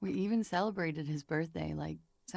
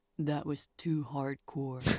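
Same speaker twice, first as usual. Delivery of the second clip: voice changed to a man's; 3 semitones lower than usual. Acting out a man answering a woman's question: voice change for the man. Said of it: "the voice change".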